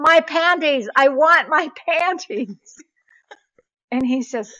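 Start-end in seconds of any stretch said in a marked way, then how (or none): 0.0-2.8 high, very slow, drawn-out demanding shout. Telling a story about a phone call, reenacting own shout: retelling own shout. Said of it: "I shout".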